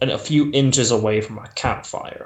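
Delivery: ordinary delivery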